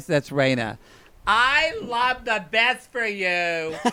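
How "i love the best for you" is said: put-on loud, drunk yelling, higher. Imitating Raina giving loud advice at the bar: imitating Raina yelling advice. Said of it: "that voice that never shuts up and yells at you".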